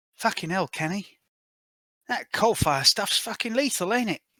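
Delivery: hushed, high half-whisper, close up to the ear. Game narrator voices a character half-whispering into a player's ear while lifted off the ground. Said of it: "she whispers into your ear".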